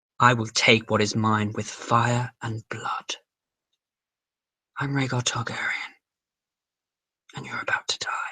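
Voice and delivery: slow, soft, whispery voice. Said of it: "he's kind of whispery".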